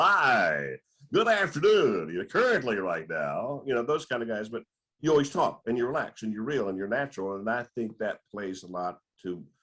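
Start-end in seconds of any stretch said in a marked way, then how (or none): 0.0-3.6 stiff, slow, swooping announcer voice, "hi" drawn out. Praising a host's natural on-air style, the speaker mocks other announcers: imitating on-air radio guys. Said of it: "who talk like this".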